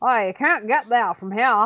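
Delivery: put-on down east Maine accent. Imitating the talking seal in a down east Maine accent. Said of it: "this, like, down east accent".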